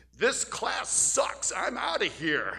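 slow, loud, drawn-out sing-song holler. Retelling another student's outburst during a lecture: imitating someone shouting. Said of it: "another student shouts".

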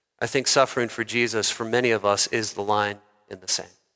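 sorrowful, heavy-hearted, low and soft voice. Addressing believers about suffering for Jesus, saying it sadly. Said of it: "And I say sadly this".

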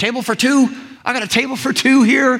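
high, bright, cheerful host voice.

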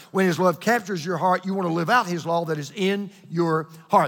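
rapid, quick-fire delivery.

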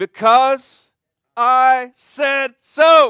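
very high, very loud, slow, drawn-out shout. Quoting a parent's answer to a child asking why, shouted. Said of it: "with a shout".

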